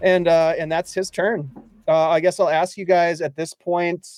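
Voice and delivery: ordinary talk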